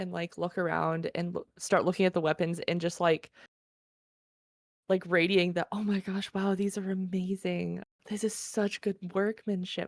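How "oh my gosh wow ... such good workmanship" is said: soft, awed half-whisper under the breath. Voicing a character admiring weapons without touching them: half-whispering to oneself. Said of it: "whispering to myself a little bit".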